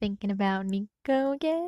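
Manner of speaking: slow, sly, suggestive voice. Narrator reads Jason asking Percy a question in a sly tone. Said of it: "Jason asked in a sly tone".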